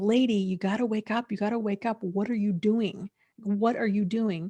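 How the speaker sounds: mock frustrated, exasperated, insistent tone. Recalling watching a TV show, reenacting screaming at the TV. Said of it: "I kept screaming at the T V".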